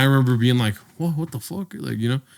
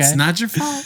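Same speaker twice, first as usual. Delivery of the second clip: soothing, gentle voice, pitched slightly higher; 7 semitones higher than usual. Play Robin Williams in Good Will Hunting as an excellent therapist, in a soothing Robin Williams impression. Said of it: "He has a soothing voice for that".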